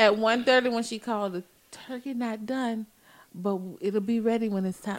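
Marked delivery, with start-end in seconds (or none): 1.3-5.0 mocking fake whisper, quieter. Imitating what the other person said when she called; imitating someone's fake whisper. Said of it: "Don't do that fake whispering stuff".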